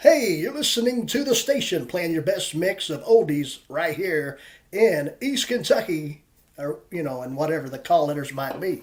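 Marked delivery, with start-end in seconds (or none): 0.0-6.2 larger-than-life put-on radio announcer voice. Recalling doing an oldies station intro in east kentucky, big radio announcer voice. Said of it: "do this big radio voice being like".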